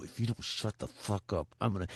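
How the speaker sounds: through clenched teeth. Retelling warning his dog the way his dad used to, talking through gritted teeth. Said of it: "He would talk like this to his teeth".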